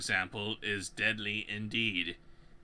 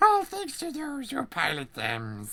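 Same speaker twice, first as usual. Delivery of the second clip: put-on creature voice, higher and louder; 6 dB louder than usual. Reading alphabet book verses in the voice the other speaker picks: Gollum voice.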